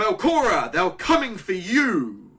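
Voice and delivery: theatrical, dramatic, very loud, swooping shout. Game master voicing a character who warns belcora: dramatic shout. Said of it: "he quite dramatically shouts out".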